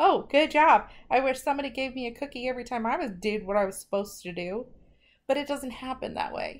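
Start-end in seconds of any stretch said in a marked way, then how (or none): 0.0-0.9 very loud, sarcastic, mocking and fake-sounding. Demonstrating sarcastic praise for someone doing what they were supposed to, sarcastic tone. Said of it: "Like that sarcasm".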